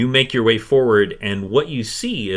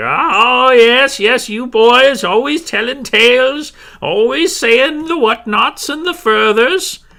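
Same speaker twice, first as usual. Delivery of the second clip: chuckling woman's voice, much higher and louder; 7 dB louder than usual. Game master voicing a woman who chuckles at the boys' stories, chuckling. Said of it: "She kind of chuckles".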